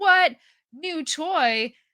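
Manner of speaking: big, loud, high-pitched booming voice. Describing Sid discovering you in his backyard, in a booming Sid voice. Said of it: "you'll just hear this booming Sid voice".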